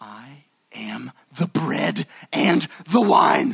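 booming, very slow, rough-edged voice. Retelling what the speaker heard the Lord say, in an Aslan voice. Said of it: "in the Aslan voice".

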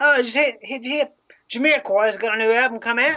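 put-on old English bloke voice. Describing a man who always calls the speaker governor: old english bloke accent. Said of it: "classic old bloke from England".

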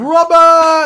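shrill, very loud, high-pitched full-blast scream. Describing a video game boss fight, imitating the boss screaming at his son. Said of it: "he fucking screams at his son".

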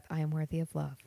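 mock muttering under breath. Retelling a movie scene of a character alone: imitating muttering under breath. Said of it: "muttering under his breath".

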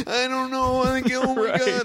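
terrified voice, very high-pitched. Retelling filming a documentary in a snowy insane asylum, imitating own scared voice. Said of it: "I'm literally like the scared most scared".

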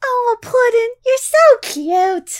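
very high, loud character voice. Thanked as Harley Quinn, the speaker tries a Harley Quinn voice. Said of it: "I can barely do that voice".

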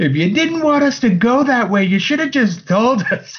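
shrill, high-pitched yelling. Retelling what the cleric yelled mid-battle: imitating the cleric yelling. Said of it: "the cleric just yells".

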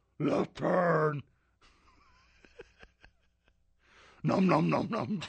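greedy, swooping puppet monster voice, chomping. Playing a navigator for a friend, the speaker does a Cookie Monster voice. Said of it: "Quit eating cookies and tell me which direction to turn".

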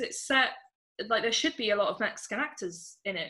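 ordinary talk

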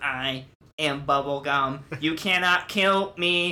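very slow, drawn-out, mechanical robot voice. Retelling a movie scene where a character speaks: imitating a robotic voice. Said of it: "talks like with a robot".

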